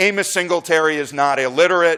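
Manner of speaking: ordinary talk, nothing marked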